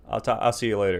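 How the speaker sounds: ordinary talk, nothing marked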